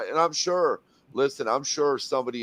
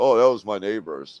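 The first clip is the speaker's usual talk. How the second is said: mocking tone, said louder; 3 semitones lower, 5 dB louder than usual. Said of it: "But Mike being Mike".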